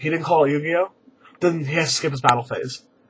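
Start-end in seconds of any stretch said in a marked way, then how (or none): 0.0-0.9 imitated serious, formal tone. Retelling a judge's ruling in a card game: imitating the judge speaking seriously. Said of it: "The judge gets really serious and goes".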